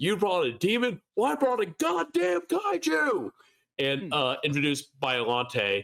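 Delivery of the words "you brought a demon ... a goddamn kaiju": acted-out scream, much higher pitched. Retelling a game session, the game master answers players' monster picks, retelling a scream. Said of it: "I just screamed".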